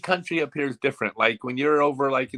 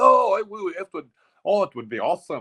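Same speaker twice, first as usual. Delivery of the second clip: higher-pitched fake Scottish accent; 5 semitones higher than usual. Retelling what Scottish people said: Scottish accent. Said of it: "It wasn't a bad Scottish accent".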